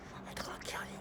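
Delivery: soft, breathy, threatening whisper under the breath.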